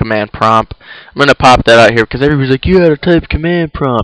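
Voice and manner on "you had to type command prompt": goofy, high, silly put-on funny voice. Mimicking what everybody says during a command prompt tutorial, in a funny voice. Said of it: "that's my funny voice".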